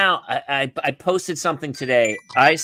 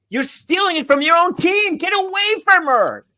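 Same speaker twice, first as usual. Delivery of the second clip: mock very high-pitched, shrill holler; 4 dB louder than usual. Describing adults yelling at kids during soccer, imitating a sideline yell. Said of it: "yelling at the kid going".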